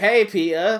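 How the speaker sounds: flirtatious, suggestive tone, pitched slightly high. Retelling how Norman Osborn greets Peter: imitating Norman Osborn flirting. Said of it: "comes off as flirting".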